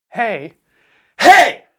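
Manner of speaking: very loud, high calling shout. Speaker shows how they yell in touche, demonstrating a yell. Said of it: "but I yell in touche".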